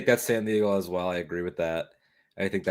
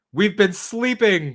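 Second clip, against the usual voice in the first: put-on very high, shrill shout, full diva squeal; 12 semitones higher than usual. Matching Muppets to characters, imagining Miss Piggy's speech, mock shouting as Miss Piggy. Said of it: "imagining her shouting like".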